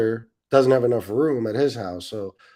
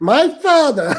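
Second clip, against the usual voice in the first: put-on whiny gossip voice, higher and louder; 8 dB louder than usual. Mocking two women's voices: mock whiny yenta voice. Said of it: "Two whiny fucking Yenta broad voices".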